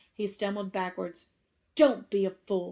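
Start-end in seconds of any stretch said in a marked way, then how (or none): 1.8-2.7 threatening, menacing snarl. Narrating a story, a face tells Harry to join him, snarling. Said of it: "snarled the face".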